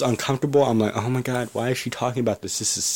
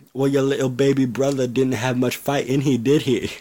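awful put-on attempt at an English accent; 3 dB louder than usual. Retelling what another person said: bad English accent. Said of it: "That's my English accent".

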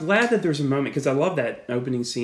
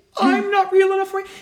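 put-on mocking hurt clown voice, higher and louder; 6 dB louder than usual. Retelling a film scene, quoting Pennywise taunting Bill: imitating Pennywise's mock-hurt mocking tone. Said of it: "his line reading is like he's hurt".

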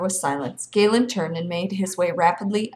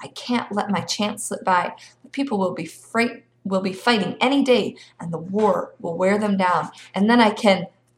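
ordinary delivery

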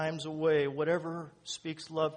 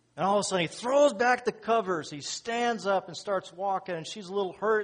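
usual speaking voice

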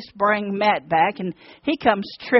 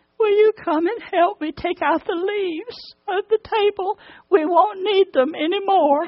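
put-on very high, small pitiful voice; 9 semitones higher than usual. Retelling what Walt said after the others left, imitating Walt's pitiful little voice. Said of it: "in this pitiful little voice".

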